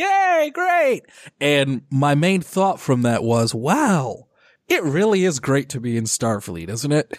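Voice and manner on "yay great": mock group cheering, pitched very high. Retelling how everyone cheered when the ensign asked to transfer, retelling a cheer. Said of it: "everyone would just cheer like".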